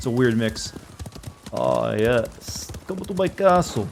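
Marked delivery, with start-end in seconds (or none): 1.5-3.9 put-on slow, luring, beckoning Transylvanian count voice. Luring unsuspecting victims to a castle: Count voice luring victims. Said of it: "the Count to lure in unsuspecting victims".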